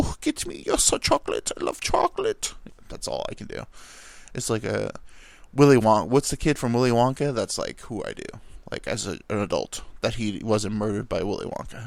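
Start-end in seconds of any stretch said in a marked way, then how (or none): 0.0-2.5 decent put-on German accent. Speaker admits he's not great at impressions, then tries one: german accent. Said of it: "that's not a bad German".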